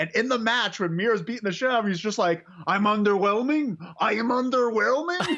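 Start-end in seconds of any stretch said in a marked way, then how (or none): 2.7-5.4 slow, deliberate, word-by-word boastful delivery. Retelling a wrestling match moment, doing a Miro impression. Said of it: "That's your best Miro impression?".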